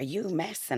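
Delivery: acted screaming. Retelling screaming at the guards taking the baby: retelling screaming at social workers. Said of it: "I was screaming at them".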